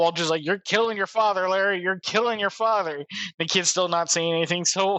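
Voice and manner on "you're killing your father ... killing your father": put-on restrained, mild half-yelling tone. Retelling Walter yelling at a silent kid: imitating Walter yelling. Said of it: "You get a lot of yelling".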